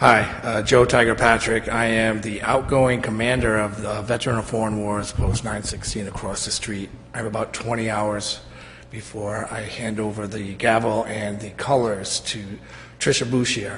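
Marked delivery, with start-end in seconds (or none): 0.6-1.7 louder, projected voice to be heard. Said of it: "Tiger, I, I can't hear you".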